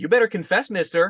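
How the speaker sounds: sassy flamboyant voice, very high.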